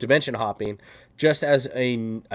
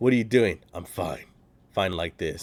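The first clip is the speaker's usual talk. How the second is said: terse, sparse character voice, very few words; 3 semitones lower than usual. Retelling how a character talks just like Rorschach did: Rorschach voice. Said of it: "he talks just like Rorschach did".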